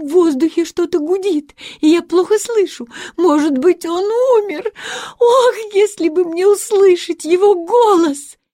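terrified, horrified, high-pitched voice. Reading a daughter's words about her sick father, seized with horror again. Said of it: "снова охваченная ужасом".

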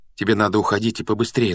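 usual speaking voice

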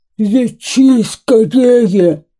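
snarling, growling, beastly wolf voice. Reading a folk tale, the narrator voices the wolf's demand to the hare, growling. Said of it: "прорычал волк".

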